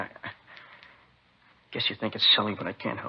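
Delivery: speaking while weeping, tearful and crying through words. Apologizing to the officers for breaking down, crying while talking. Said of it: "Crying like a kid".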